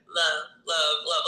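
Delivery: ordinary talk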